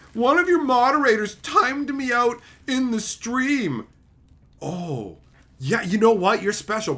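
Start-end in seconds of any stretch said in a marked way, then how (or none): 0.1-3.8 whining, whiny, pitched-up voice. Retelling a complaint a viewer left on a video: imitating a whiny complainer. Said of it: "whiny cockbag Karen went and left a comment on a video going".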